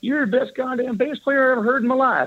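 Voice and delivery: put-on broad southern American accent, pitched very high. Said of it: "with a southern accent".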